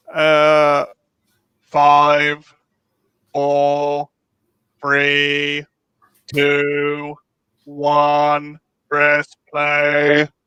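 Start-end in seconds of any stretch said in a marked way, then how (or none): 1.6-10.2 put-on robotic computer voice. Counting down to press play: cross between Cyberman and Dalek voice. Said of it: "cross between Cyberman and Dalek voice".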